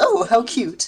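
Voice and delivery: sincere delight. Voicing a character reacting to a gift: unironic delight. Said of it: "Nighthoof unironically goes".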